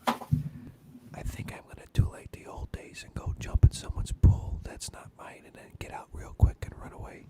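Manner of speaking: whispering. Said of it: "I'm gonna whisper to you".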